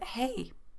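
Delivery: soft, sincere tone, not sarcastic. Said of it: "I didn't say that in a funny way. I didn't say that in a sarcastic way. I really said that".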